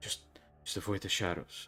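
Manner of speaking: muttering under breath. A game master voices a barely present man who mutters instead of answering. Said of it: "start to mutter under his breath".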